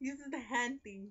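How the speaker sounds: mock nature documentary narrator, slow and high.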